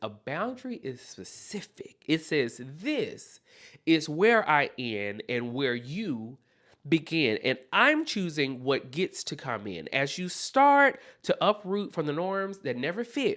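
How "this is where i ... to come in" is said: ordinary talk, nothing marked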